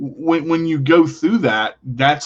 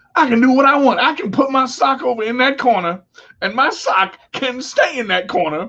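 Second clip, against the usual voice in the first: much higher pitched, proud boasting voice. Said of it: "you're like".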